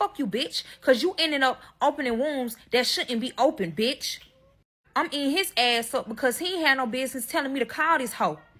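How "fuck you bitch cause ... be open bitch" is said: acted, heated, angry cursing tirade. Retelling cussing out the husband, imitating her own angry cursing. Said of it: "I end up cussing him the fuck out".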